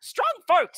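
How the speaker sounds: very high, shrill, loud goblin yelling. A goblin approaches the adventurers with a wrestling challenge: goblin yelling. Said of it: "you hear him yelling".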